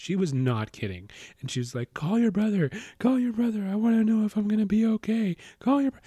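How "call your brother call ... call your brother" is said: mock very high-pitched sobbing, bawling. Retelling what the hurt girl said to the speaker, imitating someone bawling. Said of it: "she was like bawling in front of me".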